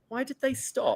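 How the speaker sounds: mock really sad, soft, disappointed voice. Retell what a man said after they stopped, imitating someone really sad and disappointed. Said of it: "sounding really sad and disappointed".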